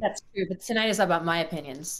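ordinary delivery

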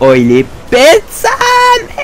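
exasperated high, slow, stretched-out yelp.

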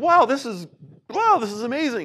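acted excitement. Telling a story, the speaker acts out a woman jumping up and down, mock-excited. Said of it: "And she's all excited".

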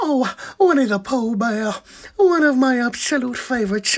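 cartoon bear voice. Speaker takes the next impression request, Winnie the Pooh voice. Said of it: "I have to do an impression".

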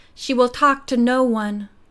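plain

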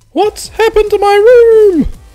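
shrill, very loud, very high screech. Reading a story, voice the secretary phoning the narrator about her room: screeching. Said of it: "The secretary screeches at me".

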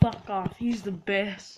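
usual speaking voice

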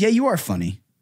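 resentful, grudging, unwilling tone. Agreeing that the other speaker is funny: resentful. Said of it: "said that with such resentment in your voice".

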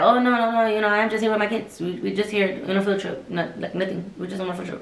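mock casual dismissive voice. Retelling a coworker answering a stranger on the bus: imitating a dismissive brush-off. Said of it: "brush him off".

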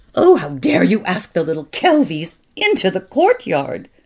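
icy, loud, cold, furious tone. Aunt Burl finds the children with the little Kelvies in the courtyard, cold and furious. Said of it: "with her cold, furious voice".

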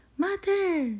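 thrilled, excited, very high shout. A little bear calls his mother over to see what he found, shouting excitedly. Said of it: "shouted Little Bear excitedly".

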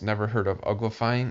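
usual speaking voice

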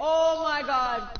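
dismayed, slow, drawn-out shout.

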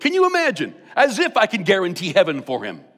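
chuckling, laughing talk with swooping pitch. Retelling a pastor's reply to a funeral director: imitating someone laughing while talking. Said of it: "he starts to laugh, and he goes".

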